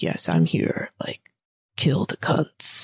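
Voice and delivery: very low, deep, distorted phone-like voice. Retelling a movie's phone call from the father: imitating a deep, distorted voice. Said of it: "you just hear this deep, distorted voice".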